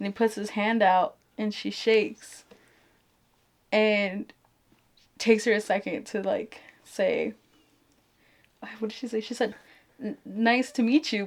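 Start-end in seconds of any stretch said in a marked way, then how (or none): 10.0-11.3 put-on stuttered words. Retelling a movie scene where the daughter greets her dad: imitating a stutter. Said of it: "but she stuttered it".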